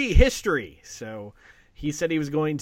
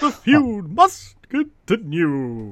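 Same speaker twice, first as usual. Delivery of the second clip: booming, very slow, swooping ring-announcer voice, "continue" stretched; 5 dB louder than usual. Doing a wrestling announcer line in a very Howard Finkel voice. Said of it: "in a very Howard Finkel voice".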